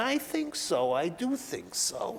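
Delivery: slow, deliberate, peculiar and distinctive way of speaking. Describing a teacher at the speaker's old school: Lionel Abel's peculiar voice. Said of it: "And he spoke like that".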